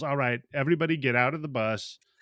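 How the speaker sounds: normal talking voice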